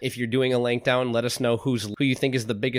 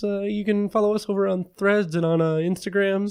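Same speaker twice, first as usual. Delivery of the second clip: teasing, mocking put-on voice, pitched up; 8 semitones higher than usual. Demonstrating on a podcast how you did the social media plug, mocking Josh's imitation voice. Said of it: "more like this".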